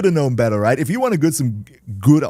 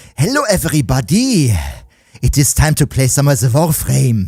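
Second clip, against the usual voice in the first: put-on German accent in English; 4 dB louder than usual. Showing how a German accent redeem would sound: German accent. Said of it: "I should add a German accent redeem".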